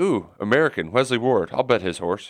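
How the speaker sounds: normal talking voice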